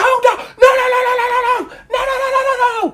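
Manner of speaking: very high, frantic, panicked shrieking. Voicing a goblin grabbed by the throat in a story, panic screaming. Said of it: "Like just like panic screaming".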